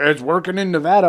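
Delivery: put-on heavy dripping sarcasm, loud. Retelling what another person said: imitating a sarcastic remark. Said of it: "all sarcastically".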